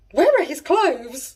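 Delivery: play-acted, high, gasping, panicked, shocked cry. Retelling a girl gasping at a wrestler at a show: imitating Felicity's shocked gasp. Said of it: "Felicity gasps".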